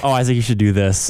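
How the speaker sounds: imitated sarcastic delivery. Retelling own past remark to a castmate: retelling own sarcastic remark. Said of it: "sarcastic or".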